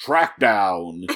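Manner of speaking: put-on classic fifties radio announcer delivery. Describing a show's opening, imitating a fifties announcer voice. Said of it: "an announcer voice".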